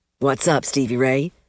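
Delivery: ordinary delivery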